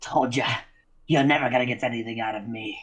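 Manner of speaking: huffing voice, puffing out breath. Voicing a captive kept for information, puffing out breath. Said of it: "he kind of puffs out".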